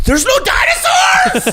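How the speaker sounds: acted-out screaming, shrieking and very high-pitched. Acting out a frustrated moviegoer: imitating a screaming moviegoer. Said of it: "I think I'm s-, screaming too much".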